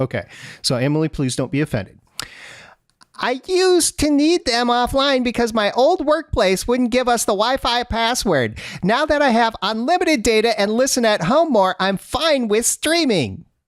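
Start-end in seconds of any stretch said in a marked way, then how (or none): 3.2-13.4 put-on Bronx New York accent, very high-pitched. A male host reads Emily's message aloud in her voice, with a Bronx accent. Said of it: "Why does she sound like she's from the Bronx?".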